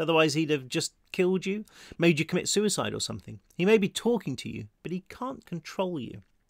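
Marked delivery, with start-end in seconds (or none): none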